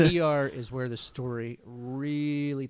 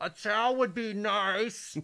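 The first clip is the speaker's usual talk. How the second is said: put-on high yell, "nice" drawn out; 8 semitones higher than usual. Speaker retelling what she yelled while someone was bleeding downstairs, retelling her yell.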